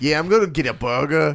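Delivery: put-on Long Island accent played for laughs. Retelling a restaurant customer from Long Island ordering: imitating a Long Island accent. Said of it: "it's amazing how funny they sound".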